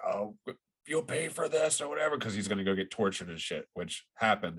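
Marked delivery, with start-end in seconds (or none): 0.0-2.2 acted, high-pitched scream. Recounting a lead character taken away by the enemy, imitating his scream. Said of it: "he's like screaming like".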